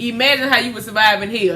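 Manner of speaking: ordinary talk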